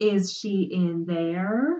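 condescending, very slow, very drawn out. Zira asks Dan again after he stares at her blankly: slow, as if to a child. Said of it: "Zira asked slowly, like she was talking to a 5-year-old".

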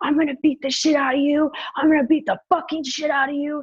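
acted-out furious, high-pitched screaming. Recounting a man who chased the speaker, retelling a scream. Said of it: "he was screaming".

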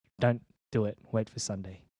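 ordinary talk, nothing marked

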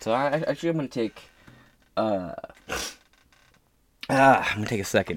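soft, choked-up, voice catching and stumbling. Admitting being upset after watching a lot of footage: choked up. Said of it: "I'm a little choked up by it".

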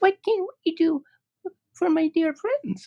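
tiny, very high, squeaky little mouse voice. Narrator reads the mouse queen asking the travelers a question, squeaky little voice. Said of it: "asked in her squeaky little voice".

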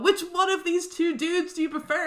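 prying voice, high and loud.

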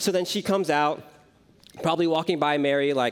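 ordinary talk

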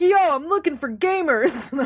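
high-pitched, shouted, loud yelling. Speaker quoting a man who walks into a place, retelling a yell. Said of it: "he's just started yelling like".

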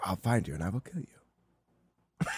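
put-on voice, very deep and very slow. Continuing the impression with a famous threat: Liam Neeson voice. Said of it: "That sounds like Liam Neeson".

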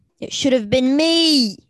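loud, furious, angry yelled outburst. Character in a role-play scene, with others watching, angry yelling. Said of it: "as he's like yelling and stuff and getting angry".

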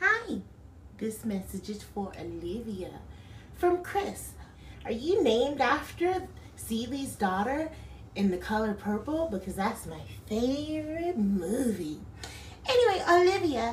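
very high-pitched talking-cat voice. Describing a service where a cat gives birthday messages: talking cat voice. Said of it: "She basically gives the cat a voice".

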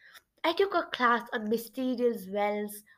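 ordinary delivery

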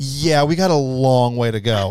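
slow, mocking, sarcastic tone. Retelling what app cast members said about readiness: imitating sarcastic tone. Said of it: "almost kind of like this sarcastic".

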